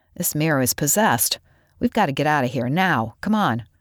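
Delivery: plain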